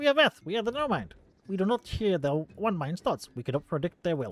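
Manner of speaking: high-pitched cartoon skeleton villain voice. Reading a character's lines aloud, in a Skeletor voice. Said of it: "time to put on the Skeletor voice".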